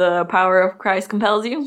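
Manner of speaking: usual speaking voice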